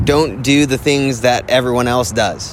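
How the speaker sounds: ordinary delivery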